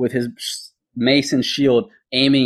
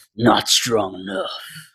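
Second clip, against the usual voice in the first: growling delivery; 3 semitones lower, 3 dB quieter than usual. Game master voicing a dragonborn just hit by a player's sword, growling. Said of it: "And he growls out".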